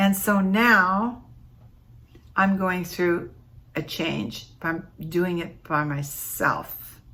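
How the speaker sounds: holding back tears, drawn-out delivery. Speaker recalling things that were special to them, holding back tears. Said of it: "I'm trying not to cry".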